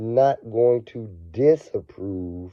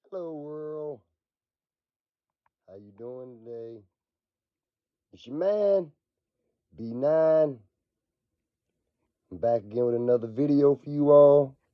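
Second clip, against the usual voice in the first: slightly scratchy, raspy, a little rough voice; 4 semitones higher, 4 dB quieter than usual. Greeting viewers at the start of a video while sick, a little scratchy cold voice. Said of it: "my voice is a little scratchy".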